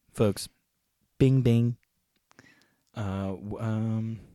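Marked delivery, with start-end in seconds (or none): 0.1-1.7 loud, booming politician voice. Trying again at a Donald Trump impression: Donald Trump impression. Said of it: "let me try".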